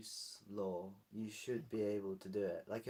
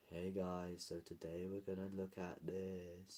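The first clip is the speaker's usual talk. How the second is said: put-on flat, dull, bored monotone reading; 3 semitones lower, 6 dB quieter than usual. Retelling an audio recording they deleted: imitating own dull, bored delivery. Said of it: "I just sounded so dull and, like, bored".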